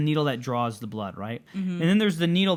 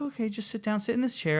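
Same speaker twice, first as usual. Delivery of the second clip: quiet, very soft-spoken voice, pitched up; 7 semitones higher, 5 dB quieter than usual. Retelling how the woman taking blood told them to sit: imitating a very soft voice. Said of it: "had a very soft voice".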